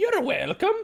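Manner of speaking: character voice pitched very high. Voicing Meepo, who answers a thank-you from inside a character's mind: Meepo voice. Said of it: "hear Meepo's voice again".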